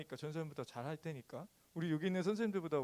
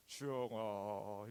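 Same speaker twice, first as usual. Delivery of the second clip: put-on trembling voice, pitched much lower; 7 semitones lower, 5 dB quieter than usual. Showing how they voice God in storytelling videos for children: God voice, trembling throat. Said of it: "하나님 목소리를 흉내 낼 때 주영아 이러면서 목젖을 막 떨면서".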